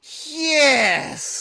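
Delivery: dinosaur monster voice. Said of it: "you do the voice so much better than I do".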